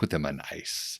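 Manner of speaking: put-on whispered German villain accent. Recapping a Bond film scene, quoting the villain's order in Largo's German accent. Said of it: "in his very Largo German accent".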